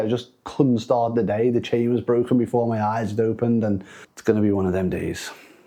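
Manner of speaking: ordinary talk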